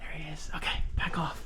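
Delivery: very quiet hushed whisper. Speaker spots someone walking a dog nearby, whispering. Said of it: "I'm whispering like he can hear me".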